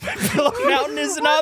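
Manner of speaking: laughing throughout the line.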